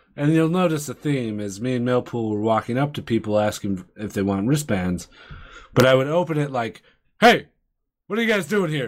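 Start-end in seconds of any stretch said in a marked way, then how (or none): 7.2-8.9 friendly, pitched-up voice that sounds like a cop. Retelling how he approached people offering wristbands, a narc-sounding greeting. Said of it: "You sound like a narc".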